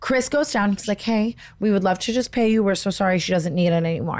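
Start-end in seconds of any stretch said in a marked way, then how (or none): none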